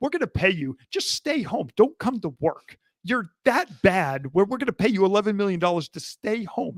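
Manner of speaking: ordinary delivery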